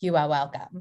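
delivered like an actress on stage. Recalling a stage role by doing an impression: Lily Rabe impression. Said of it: "my Lily Rabe impression".

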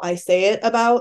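usual speaking voice

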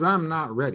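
ordinary delivery

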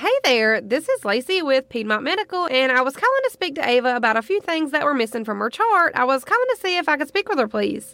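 put-on cheery, bright, friendly customer service voice. Retelling a phone call made under a fake name: bravest, friendliest customer service voice. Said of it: "customer service voice".

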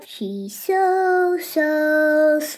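very slow, stretched, sarcastic, sweet. Showing an example of sarcasm about someone who's not sweet: example of a sarcastic remark. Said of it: "that would be sarcasm".

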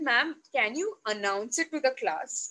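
ordinary delivery

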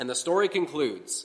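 plain

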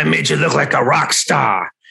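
rough, raspy, creaky voice. Retelling what a man said to the speaker, raspy voice. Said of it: "he had a raspy voice".

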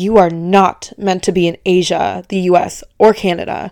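mock-aggressive tone. Quoting what a woman told the speaker, imitating an aggressive tone. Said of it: "She was like so aggressively in this tone".

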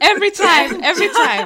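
high, loud laughing throughout.

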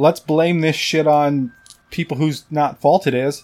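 ordinary delivery

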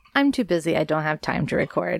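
ordinary talk, nothing marked

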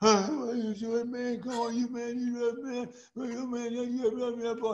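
put-on frenzied outburst. Retelling a ballgame, voicing the right fielder fussing at the umpire: imitating a fielder going crazy. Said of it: "The right fielder went crazy".

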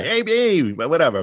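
put-on New York accent. Describing a kid whose accent they love, doing his line in a thick Queens, New York accent. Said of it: "It is like total Queens, New York, Brooklyn".

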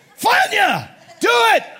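shrill, high, loud screaming. Retelling ordering a student to hit himself: imitating someone screaming. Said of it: "I can chew him out now".

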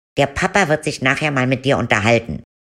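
stern mother voice, scolding tone. Narrator retelling what her mother told her about the nightgown, imitating her mother.

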